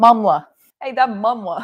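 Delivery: clumsy, unconvincing, badly done Boston accent. Commenting on a Boston-based photographer, trying the local accent; bad Boston accent. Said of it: "I can't even do a Boston accent".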